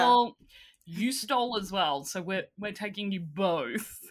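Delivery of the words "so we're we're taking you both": ordinary talk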